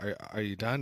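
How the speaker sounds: normal talking voice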